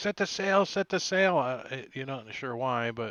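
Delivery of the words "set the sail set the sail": very high-pitched shout, repeated twice. Voicing a character on a ship calling to the crew: yelling.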